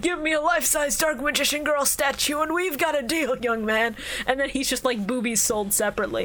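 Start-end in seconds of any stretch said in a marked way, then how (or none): 0.0-4.0 put-on elderly gentleman's voice. Picturing an old man being swindled in a deal: old man voice. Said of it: "this old man who just goes like".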